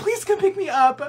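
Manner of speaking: high, tearful, pleading voice.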